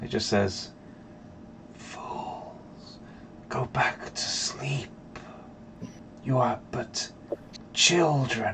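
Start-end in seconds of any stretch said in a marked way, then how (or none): 1.7-8.5 very slow, hushed, breathy whisper. Game narrator voicing a whisper that all the players hear, whispering. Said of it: "You all hear this whisper together now".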